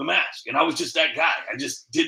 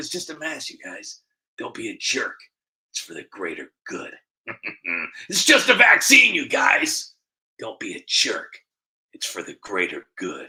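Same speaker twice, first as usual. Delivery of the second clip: deep, swooping villain voice; 4 semitones lower than usual. Slipping into the Joker voice he does in his videos. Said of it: "Every time I do the Joker voice".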